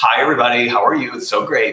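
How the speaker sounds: exaggerated valley girl voice. Speaker demonstrating how most people open a talk, exaggerated valley girl voice. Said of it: "I'm being a little exaggerated".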